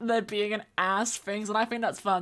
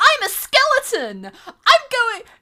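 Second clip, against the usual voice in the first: put-on happy skeleton voice, higher and louder; 12 semitones higher, 7 dB louder than usual. Retelling a meme where Papyrus grabs a human: happy Papyrus voice. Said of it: "with the happiest fucking smile and, like, lightest expression".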